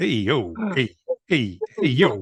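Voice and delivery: put-on, animated, swooping New York street accent. Asked by the other speaker to show their best New York talk, New York accent. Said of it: "let me hear your best New York talk".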